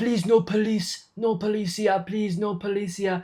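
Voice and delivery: pleading broken English. Retelling what the man said after jumping out of his wrecked car, in broken English. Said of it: "In broken English, he's like".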